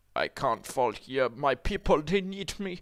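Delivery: put-on, fake German accent. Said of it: "Why did I give him a German accent?".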